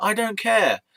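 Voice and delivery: defiant, snapped back high and loud.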